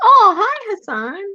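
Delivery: voice suddenly jumping way up, high-pitched. Greeting hassan as he is mentioned, voice jumps way up high. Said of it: "You hear how her voice went up like three octaves?".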